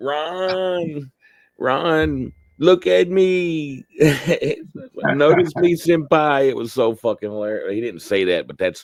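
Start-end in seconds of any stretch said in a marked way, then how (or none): 0.0-6.5 very high, slow, acted-out sobbing, "me" stretched. Retelling a drunk person pleading to Ron, imitating someone crying. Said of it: "he's fucking crying to Ron".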